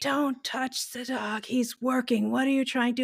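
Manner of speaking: man's toned-down, mild angry roar. Retelling being scolded by a man with a dog: imitating a man roaring. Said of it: "he just roared at me".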